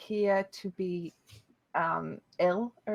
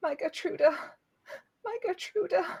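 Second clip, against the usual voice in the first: very high, weeping sobs; 10 semitones higher than usual. Voicing a distraught woman rocking with a doll: sobbing to herself. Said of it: "she sobs to herself".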